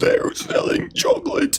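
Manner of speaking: shrill, rasping cartoon woman's shrieking screech. Speakers trading impressions of a cartoon character, in a SpongeBob chocolate lady voice. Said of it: "that one lady from SpongeBob that's like".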